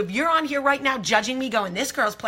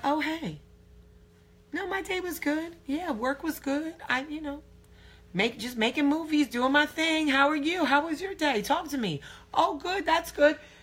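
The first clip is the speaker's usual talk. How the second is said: breezy, pitched-up, acted casual and cool; 6 semitones higher, 4 dB quieter than usual. Retelling acting casual when he asked about the day: imitating playing it cool. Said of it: "trying not to geek out".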